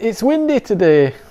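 Scottish accent. Reading out the front of a card, in a Scottish accent. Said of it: "That's my best Scottish accent".

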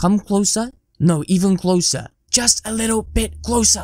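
stage half-whisper, voice kept on. Drawing the viewers in for a joke secret: half-whispering quietly. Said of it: "I'm gonna whisper something really quietly".

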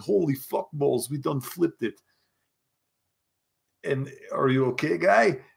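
full put-on Russian accent, all the way. Concussed after the car flipped, speaker calls to Ernie in a full Russian accent. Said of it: "continued the Russian accent and said".

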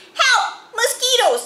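loud, shrill, very high-pitched yell. Narrator reading the boys' cry as they tumble off their cots, yelling. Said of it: "Yelled the boys".

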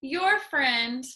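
ordinary talk

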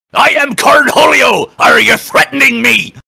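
very high, loud cartoon fox voice. Performing a Beavis and Butthead line as Foxy: Foxy voice. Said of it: "you're making me do a Beavis and Butthead line as Foxy?".

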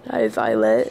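low, croaky voice that is giving out. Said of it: "It's getting really hard to talk".

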